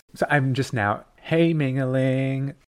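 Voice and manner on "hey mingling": lilting, cheery, upbeat sing-song voice. Sharing a newly chosen name with a co-host: sing-song, upbeat. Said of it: "It's very sing-song, isn't it? It's very upbeat".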